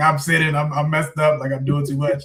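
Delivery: weeping, choked-up, tearful delivery. Retelling calling the youth pastor one night, retelling own crying.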